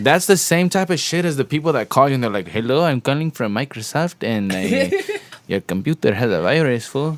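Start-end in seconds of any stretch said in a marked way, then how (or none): 2.5-7.2 slow, fake, put-on Mexican accent. Imitating a scam caller who phones about a virus: put-on Mexican accent. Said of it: "why am I sounding Mexican?".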